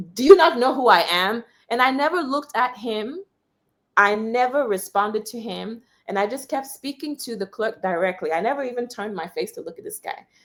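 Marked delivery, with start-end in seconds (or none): 0.1-1.4 loud mock shout with raised voice. Retelling how a man beside the speaker shouted: imitating a man shouting. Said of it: "starts beating his chest like this".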